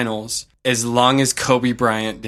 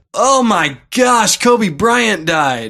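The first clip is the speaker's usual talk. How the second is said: acted stunned near-yell, loud, high, drawn-out; 9 semitones higher, 5 dB louder than usual. Retelling spotting news on a cafe tv: retelling own past yell. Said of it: "I almost, like, yelled".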